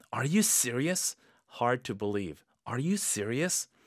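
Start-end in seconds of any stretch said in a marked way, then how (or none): 0.1-1.1 mildly disbelieving, slightly doubtful tone. Demonstrating the phrase in a slightly doubtful tone. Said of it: "약간 의심하는 톤으로".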